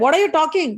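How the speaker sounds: angry defensive tone. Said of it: "now they both started fighting".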